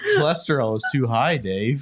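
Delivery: sci-fi ship's computer voice. Playing a computer warning Dave about cholesterol: HAL 9000 voice. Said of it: "you sound like Hal from two thousand one Space Odyssey".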